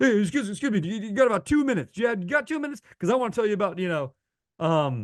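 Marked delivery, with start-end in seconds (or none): 0.0-3.8 pitched-up, hawking carnival barker showman voice. Describing a worst-case approach, the speaker acts out a P. T. Barnum carnival barker. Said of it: "you have a carnival barker".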